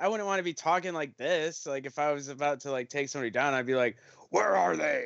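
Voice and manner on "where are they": gruff, disguised hero voice. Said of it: "I'd want a different voice".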